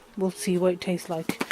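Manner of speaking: ordinary talk, nothing marked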